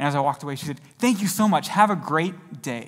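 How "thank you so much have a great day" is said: acted, eager, thrilled, excited delivery. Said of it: "She was so excited".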